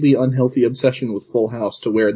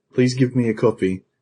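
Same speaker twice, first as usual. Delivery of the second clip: acted, ashamed-sounding voice. Retelling a commercial where a customer asks for a game: imitating someone speaking shamefully. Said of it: "very shamefully".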